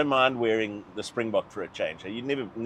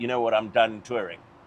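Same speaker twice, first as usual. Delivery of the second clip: plain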